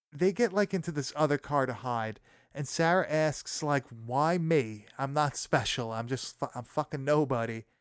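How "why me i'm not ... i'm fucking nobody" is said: ordinary talk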